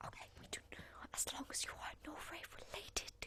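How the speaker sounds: speaking in whisper. Asking another character in a whispered exchange: whispering. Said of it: "I don't know why we're whispering".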